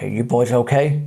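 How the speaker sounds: very deep, husky, rumbling voice. Retelling what a huge officer said to him and his friends, very deep, husky voice. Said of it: "very deep, husky voice".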